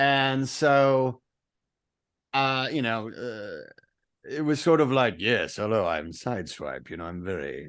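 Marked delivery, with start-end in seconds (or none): 5.2-7.7 low, suave voice, nearly English accent. Recalling a voice session and showing the voice used, Sideswipe voice, almost English. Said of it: "almost English, but not quite".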